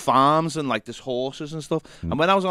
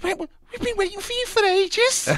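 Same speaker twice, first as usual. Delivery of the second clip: put-on camp voice, much higher. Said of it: "in his best like [name] contestant went".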